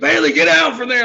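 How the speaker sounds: high-pitched, loud dad voice yell.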